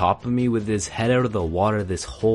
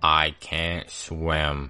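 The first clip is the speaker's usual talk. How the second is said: flattest, most unvarying low deadpan monotone, "swim" drawn out; 6 semitones lower, 3 dB quieter than usual. Retelling a struggle for his life, the speaker quotes another man; most monotone voice. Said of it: "he says in the most monotone voice".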